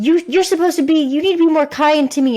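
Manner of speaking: high-pitched, demanding yell.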